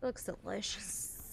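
slow, soft, hushed whisper.

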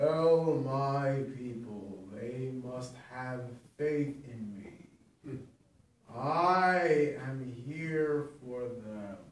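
very low, deep, entranced voice with "I" drawn out. A man raises his arms to the sky and speaks, deep trance voice. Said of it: "talks in a deep, lower voice, as if in a trance".

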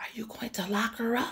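soft, high-pitched, hushed whisper. A daughter asks her father a question, whispered. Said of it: "she whispered to her father".

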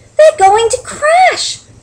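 very high, loud gasped-out words. Stellaluna sees her friends, who cannot see, flying blind, gasping. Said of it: "gasped Stellaluna".

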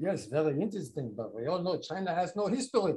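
put-on thick German accent, old man's voice. Retelling a question after a public lecture: imitating a strong German accent. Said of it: "An old gentleman with a very strong German accent".

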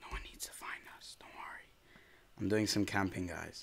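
hushed, quiet speech. Hiding from enemies in a game with teammates, hushed.

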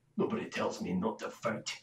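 very quiet, whispered muttering under the breath. Voicing a character who looks over at Corn: muttering under his breath. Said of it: "he mutters under his breath".

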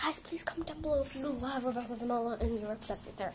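soft, gentle whispered delivery.

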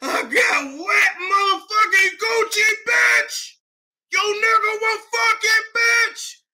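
very high, cracking voice, fighting back tears. Imitating Evelyn holding back tears while mad: imitating Evelyn's cracking voice. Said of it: "Voice was cracking".

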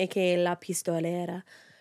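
name pronounced with a Spanish accent. Introducing the subject of the case by her nickname: saying the name in a Spanish accent. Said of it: "I just have to say it in the Spanish accent".

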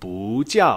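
不 said with a rising second tone. Mandarin lesson on tone change before a fourth tone: second tone on 不. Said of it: "I'm pronouncing the character 不 here in the second tone".

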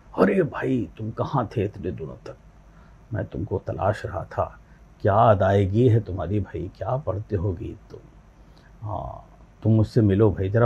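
heavy, weighty, soft, deep bass voice. Retelling a phone call from someone in films: imitating a deep bass voice. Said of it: "बहुत बड़ी बेस वाली आवाज़".

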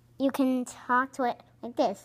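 normal talking voice

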